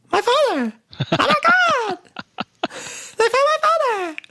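mock voice, very high-pitched, excited cry. Recapping a scene, the speaker quotes Jim reading his father's letter: imitating Jim's high excited cry. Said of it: "his voice is like up there".

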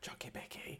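very quiet, breathy, barely-there whisper. Retelling whispering a treat word in Willow's ear on walks: imitating a whisper. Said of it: "I'll just whisper".

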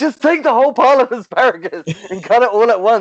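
very high, fed-up, exasperated yell. Recalling watching a TV character chop asparagus, retelling yelling at the TV. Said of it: "yelling at the TV".

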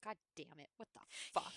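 exasperated cursing breathed out in a whisper. Recapping a reality show episode, imitating Jim Edmonds cursing. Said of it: "every time he's like".

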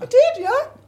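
voice jumps suddenly very high and very loud. Answering whether they enjoyed being on Big Brother, voice suddenly going really high. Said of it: "Why did my voice go really high?".

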